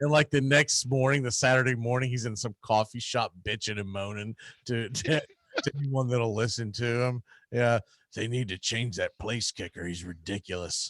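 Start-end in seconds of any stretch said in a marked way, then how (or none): 7.5-10.9 put-on low, creepy, grumbling old man voice. Acting out a man complaining in a coffee shop to anyone listening: creepy old man voice. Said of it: "You got that creepy old man voice going".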